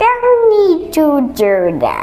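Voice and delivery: high, slow witchy voice.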